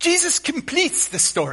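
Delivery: put-on very high-pitched Scottish accent. Quoting a line as Alistair Begg would say it: Alistair Begg Scottish accent. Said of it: "Alistair Begg with his Scottish accent".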